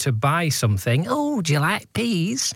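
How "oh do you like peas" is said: exaggerated Northern English accent, slow, high. Mimicking a TV advert trying to sell something, in a put-on Northern voice. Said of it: "That's Northern voice".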